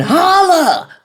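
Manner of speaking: very high, screamed-out voice. Retelling own reaction to a quoted comment: screaming. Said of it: "And I'm screaming".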